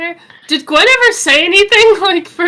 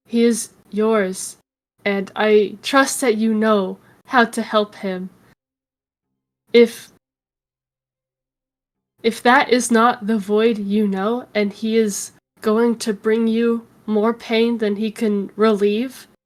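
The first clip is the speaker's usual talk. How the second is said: in-character whisper, lower and quieter; 7 semitones lower, 6 dB quieter than usual. Voicing a character who passes a dagger to Gwen: whispering in character. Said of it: "And I'm gonna whisper to Gwen".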